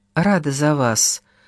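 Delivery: mumbled speech. Monica, uneasy in a dim storeroom, replies, muttering. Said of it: "пробормотала Моника".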